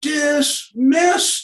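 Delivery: very high-pitched, loud, drill-style yell. Describing a man he watched, the speaker repeats his command, retelling a yell. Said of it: "And then he yells".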